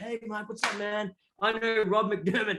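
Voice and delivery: acted confident cool-guy tone. Retelling what he said on meeting someone, acting really cool. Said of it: "I was just acting like really cool".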